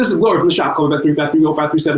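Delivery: talking as fast as possible, rushed rattle. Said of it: "She would talk as fast as she could".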